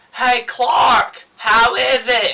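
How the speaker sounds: put-on old country woman hollering, very loud, high, drawn-out. Describing a scene, the speaker acts out Martha Kent yelling at the phone. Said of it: "she's yelling at the phone".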